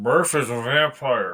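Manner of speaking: muffled, smothered, corner-of-mouth voice. Retelling a story, the speaker says it face down on a table, muffled. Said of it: "you hear it muffled".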